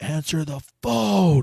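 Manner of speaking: mock, loud, shrill screaming. Telling a story about a guy yelling to answer the phone, retelling a scream. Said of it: "this guy is fucking screaming".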